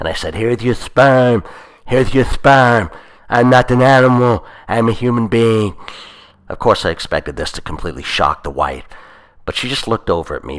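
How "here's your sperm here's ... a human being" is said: put-on slurred, slow, raised voice. Speaking to a couple, in your best slurred Elephant Man voice. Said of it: "using my best slurred Elephant Man voice".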